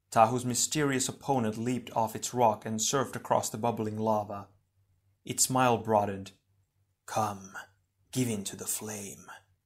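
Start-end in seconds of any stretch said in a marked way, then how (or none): 7.0-9.3 soft, hushed half-whisper under the breath. Tahu's mysterious opponent, surfing across the lava, speaks to Tahu, half-whispered. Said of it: "it whispered".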